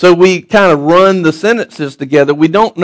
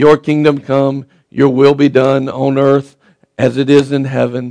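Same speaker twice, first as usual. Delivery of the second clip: droning, flat, lifeless monotone; 4 semitones lower than usual. Showing how a metered line usually gets said: flat lifeless monotone. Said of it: "it's monotone, there's no life in it".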